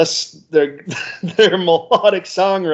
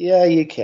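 dry, sarcastic, mock-agreeable tone. Answering another speaker who says he can survive it: sarcastic. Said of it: "I like the sarcasm there".

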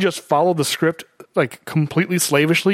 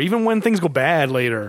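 normal talking voice

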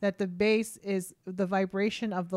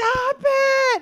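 put-on toddler scream, higher and louder; 11 dB louder than usual. Retelling a toddler's reaction to loud parade noise: imitating a toddler screaming. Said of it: "scream to tell him to shut up".

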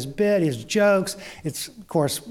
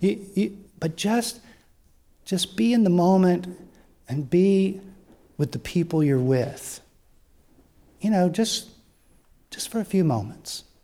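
speaking almost in a whisper. Retelling a performer inviting the audience to be present: imitating someone almost whispering. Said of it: "he's almost whispering".

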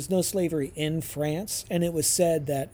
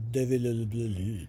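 fast, mumbled, slurred together indistinctly; 5 semitones lower than usual. Showing how a name has to be said: mumbled name. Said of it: "And you have to mumble".

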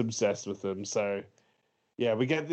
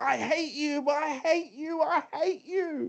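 high-pitched mock child scream. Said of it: "the son's just screaming".

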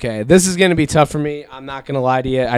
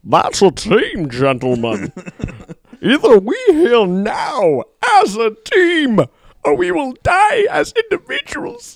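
high, swooping masked-villain voice with swinging pitch; 12 semitones higher than usual. A host tries one line in a villain's voice as a punishment: Bane voice. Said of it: "one line Bane voice a shot".

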